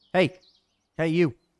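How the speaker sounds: calling out loudly. A player calls out to a figure in the darkness, shouting. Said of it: "You're going to shout".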